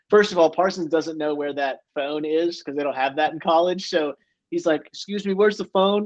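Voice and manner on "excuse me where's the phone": put-on high, small, polite child's voice. Retelling a player asking where the phone is: imitating a childlike voice. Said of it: "His voice instantly changes like this child".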